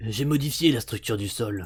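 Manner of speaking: low, menacing-sounding bad-guy villain voice. Reading the villain's line aloud from a manga: villain voice. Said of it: "je vais faire la voix du méchant".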